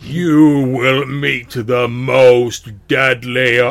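very loud, slow, drawn-out demonic booming voice. Narrating a game, a talking face continues its warning: loud booming voice. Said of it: "loud voice booms out and says".

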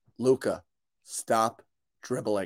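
very gentle, soft, close-up voice. Retelling a moment nose to nose with a player: retelling own very gentle words. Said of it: "And I very gently said".

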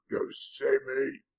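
rough, gravelly rasp, gruff and half-choked. Narrator reads a talking root's line, in a gruff, gravelly, strangled voice. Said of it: "the root asked in a gruff, gravelly voice, like it was slowly being strangled".

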